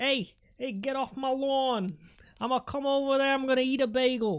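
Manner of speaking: poorly practiced Boston accent. Admitting the American accent isn't well practiced, the speaker tries a bad Boston American accent. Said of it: "I've always been more of a Boston American".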